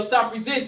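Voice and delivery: ordinary talk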